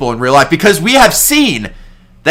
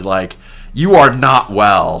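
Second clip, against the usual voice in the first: ordinary talk, nothing marked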